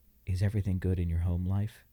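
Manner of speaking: discreet, confidential aside. Retelling a nurse's question at the hospital, imitating someone speaking quietly. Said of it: "she real quietly to me goes".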